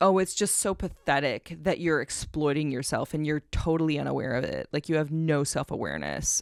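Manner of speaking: patronizing, condescending tone full of pity. Retelling a comment-section argument with a twenty-year-old: imitating a patronizing tone. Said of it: "using the most just, like, patronizing tone with me".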